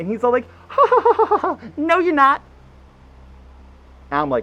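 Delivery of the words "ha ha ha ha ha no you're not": put-on effeminate girly voice, higher pitch. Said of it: "the most effeminate, girly voice in the world".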